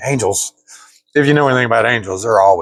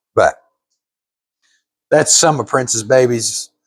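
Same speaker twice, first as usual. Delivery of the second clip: ordinary delivery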